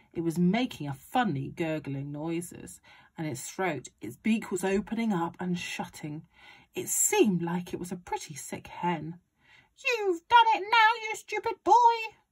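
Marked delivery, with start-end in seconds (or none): 9.8-12.1 high-pitched, shrill, scolding yell. Grandma rounds on the boy over the sick hen: shouted. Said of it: "Grandma shouted".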